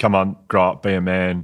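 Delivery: plain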